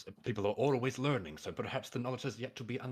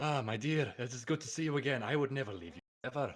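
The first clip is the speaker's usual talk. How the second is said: put-on Spanish-accented character voice; 2 semitones higher than usual. Greeting a childhood friend in character: put-on Spanish accent. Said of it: "That is a voice choice".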